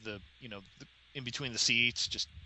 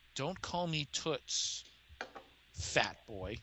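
close, private, hushed whisper; 3 semitones higher, 5 dB quieter than usual. Voicing a woman who whispers in the listener's ear, whispering in ear. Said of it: "whispers in your ear".

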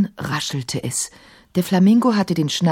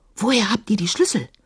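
whispered, much higher pitch; 2 semitones higher than usual. Narrator voicing Emma asking where the keys came from, whispered. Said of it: "flüsterte Emma".

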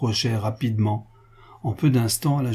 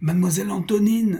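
high-pitched anguished crying out; 8 semitones higher than usual. Narrator reads a voice near a distant light calling for antonine, anguished cry. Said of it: "une voix s'écria avec angoisse".

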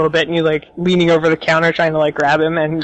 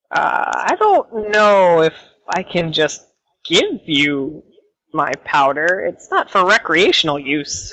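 skeptical, wary little gnome voice, swooping pitch. Game master voicing a gnome who looks the player up and down, skeptical gnome shopkeeper. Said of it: "he's very like skeptical".

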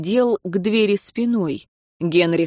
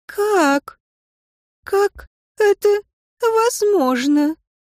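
very high, trembling, quavering voice; 14 semitones higher than usual. A narrator reading a woman's line as she opens her eyes: trembling voice. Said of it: "произнесла дрожащим голосом".

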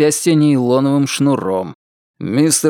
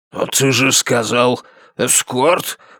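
mumbled, indistinct speech; 3 semitones lower than usual. Narrator voices a man questioning his companion's choice of word, muttering. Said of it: "пробормотал он".

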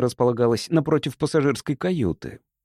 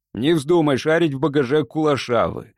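plain reading voice

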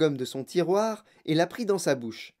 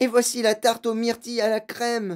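called out at high pitch; 5 semitones higher than usual. While a man wrings his hands over unready gum, she calls out: yelled. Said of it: "hurla Violette".

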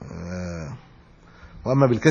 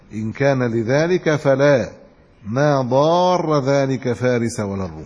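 usual speaking voice

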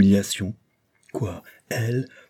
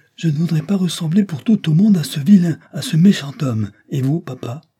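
put-on high, loud, unruly childish outcry; 8 semitones higher, 5 dB louder than usual. Narrator voicing William as he recognizes Levison, exclaiming like an enfant terrible. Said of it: "s'écria en véritable enfant terrible".

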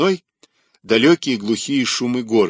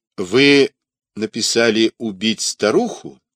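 ordinary delivery

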